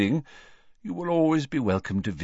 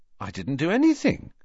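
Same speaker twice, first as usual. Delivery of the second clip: taken-aback, surprised, pitched-up tone; 6 semitones higher than usual. Harry answers Dumbledore's praise, surprised. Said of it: "said Harry in surprise".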